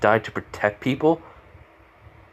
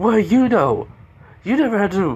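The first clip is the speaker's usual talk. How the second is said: put-on high-pitched indignant kid voice. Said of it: "I was like".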